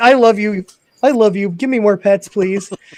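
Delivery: dog character voice. Voicing the dog begging for more pets: voicing the dog Comet. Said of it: "Comment's like".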